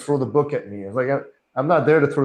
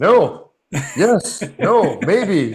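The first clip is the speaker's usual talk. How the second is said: acted, very slow, fumbling, flustered, nervous, pitched up; 6 semitones higher, 4 dB louder than usual. Retelling being pulled over by police as a kid: retelling nervous answer. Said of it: "And you're nervous".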